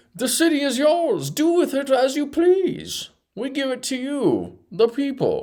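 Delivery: high, hushed, slow villain voice. Commenting on a candidate's pledge, doing a Bane impression. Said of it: "that was my Bane impression".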